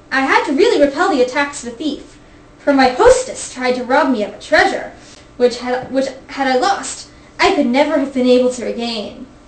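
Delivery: ordinary delivery, nothing marked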